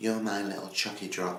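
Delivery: ordinary talk, nothing marked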